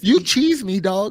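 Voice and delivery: put-on squeaky, very high-pitched Toronto accent. Quoting a man in a story, imitating a Toronto accent. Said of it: "Insert Toronto accent here".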